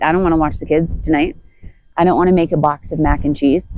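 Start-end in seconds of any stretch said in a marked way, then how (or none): none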